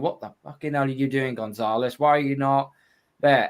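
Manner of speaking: put-on furious, exasperated, angry shout. Retelling a first reaction to a live play: retelling own furious shout. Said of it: "The first thing I shouted and screamed".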